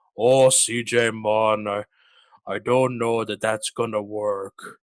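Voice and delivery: imitated Jamaican accent. Retelling what the speaker's doctor told them: imitating doctor's jamaican accent. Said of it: "he has like a Jamaican he's like accent".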